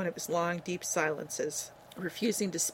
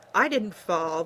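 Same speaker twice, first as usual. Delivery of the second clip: loud, defensive snarl; 7 dB louder than usual. Ben answers the preacher's teasing, snarled defensively. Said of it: "Ben snarled defensively".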